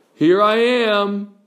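unhurried turtle voice, drawn-out "am". Telling the tortoise and hare story, the tortoise calls out in his turtle voice. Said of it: "he called out in his turtle voice".

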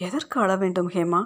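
ordinary delivery

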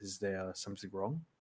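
hushed conspiratorial voice. Voicing a character leaning in conspiratorially: lowered voice. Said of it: "lowers his voice and says".

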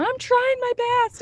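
very high, shrill shouted yell. Recalling being yelled at by their husband while spotting him, speaker re-enacts the reply: retelling yelling back. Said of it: "I'm yelling back at him".

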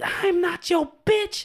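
very high, shrill, drawn-out scream. Describing a lady heard through a door going off on a guy, retelling her screaming. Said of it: "this lady screaming bloody murder".

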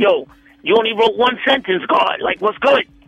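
put-on hyped-up, energetic hype-man voice. Retelling how a bandmate rallied the studio: imitating a hyped-up bandmate. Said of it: "So he was like".

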